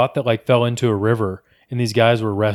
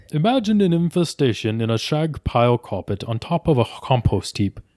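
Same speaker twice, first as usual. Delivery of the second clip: put-on British accent, read-aloud delivery. Reading a nature narrator's quote aloud for the others: british accent. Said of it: "you read it in your British accent".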